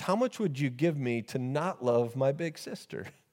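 normal talking voice

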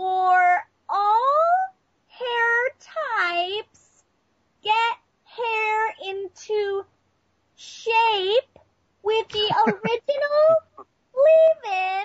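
slow, loud, nasal mock woman's voice. Reading a shampoo bottle in the slow, loud, nasal voice of a woman. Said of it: "literally how she talks".

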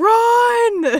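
loud, high shout.

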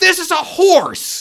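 angry, very loud, high-pitched, drawn-out full-volume shout. Recounting a scene where one man turns to another and yells: retelling a yell. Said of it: "turns to Tim and just yells".

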